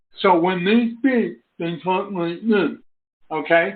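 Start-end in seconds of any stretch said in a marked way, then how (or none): 0.2-2.8 speech of a talker unable to hear themselves. Describing how a deaf man he could barely understand spoke, imitating deaf speech. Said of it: "I'm only doing an impression".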